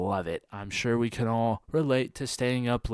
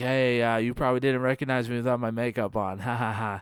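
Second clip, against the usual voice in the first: acted joking manner. Retelling a remark from a former schoolmate at the movies: imitating someone joking. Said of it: "jokingly, she was like".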